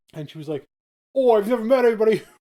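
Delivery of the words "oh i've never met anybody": put-on British woman's voice, high and loud. Speaker quotes a british woman who approached them while reading, imitating a british woman. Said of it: "I had to do the voice".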